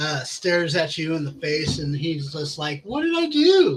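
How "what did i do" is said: shrill, very high, loud, irate little gnome voice. Narrating a smacked gnome staring the player in the face, angry little gnome voice. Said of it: "this angry little gnome".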